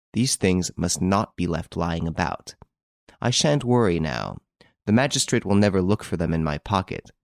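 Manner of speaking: ordinary delivery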